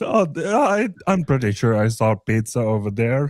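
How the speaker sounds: put-on dismissive voice. Retelling a store worker's answer: imitating a dismissive Indian response. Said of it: "such an Indian dismissive response".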